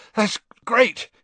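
very high, gasping, breathless words. After swallowing very hot soup, he replies: gasping. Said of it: "he gasped".

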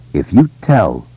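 ordinary delivery, nothing marked

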